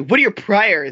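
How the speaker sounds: snotty, snide, bitchy, looking-down-on-you tone. Retelling what she asked him, in a mock bitchy tone.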